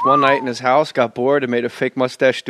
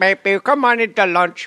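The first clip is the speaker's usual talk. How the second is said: higher-pitched put-on Indian accent; 6 semitones higher than usual. Imitating a lunch truck driver calling people to lunch: Indian lunch truck driver accent. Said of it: "That's my Indian, uh, lunch truck driver".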